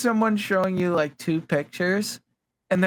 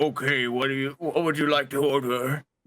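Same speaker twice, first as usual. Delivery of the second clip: deep, low-pitched male voice; 6 semitones lower than usual. Retelling how a guy suddenly asked what to order: deep guy's voice. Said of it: "a deep guy's like".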